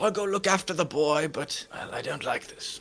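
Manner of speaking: soft mumble, under the breath, half to oneself. Voicing a character who agrees to look after the boy: mumbling under his breath. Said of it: "He mumbles under his breath and wanders out".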